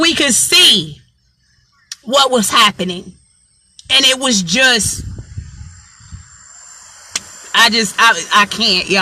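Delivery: emotion welling up, words giving out, stumbling. Recalling seeing what was happening with the planes, getting emotional. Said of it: "I'm getting emotional".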